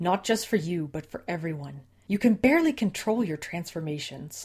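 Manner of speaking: cutting, sharp, hard-edged snap. A woman refuses to let another come along, with a hard edge in her voice.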